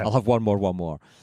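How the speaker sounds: ordinary talk, nothing marked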